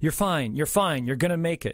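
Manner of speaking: usual speaking voice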